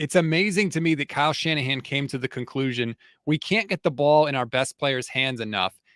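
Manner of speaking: ordinary talk, nothing marked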